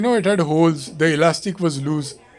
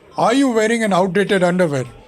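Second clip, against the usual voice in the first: mock radio ad man voice, confident, full of conviction. Retelling a radio advertisement about underwear: imitating a radio ad man's conviction. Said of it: "this guy with a lot of conviction is like".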